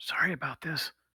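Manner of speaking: faint, high, barely audible whisper. Voicing a goblin who apologizes quietly before spitting: whispering. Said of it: "his whisper".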